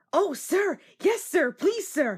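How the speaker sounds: eager, keen voice. Reading a story aloud, an engine answering an offer to help: excited. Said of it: "answered Percy excitedly".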